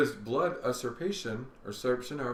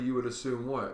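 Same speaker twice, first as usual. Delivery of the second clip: ordinary talk, nothing marked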